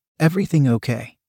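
usual speaking voice

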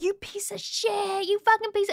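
high, shrill, screeching cursing yell. Telling a car story, speaker re-enacts yelling at a woman who cut them off, retelling a yell. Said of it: "started yelling at the car".

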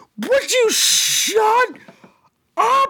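mock shrill, very slow, high, drawn-out yell. Retelling a friend's reaction in the theater: imitating Bradford yelling. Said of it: "And Bradford just yells out".

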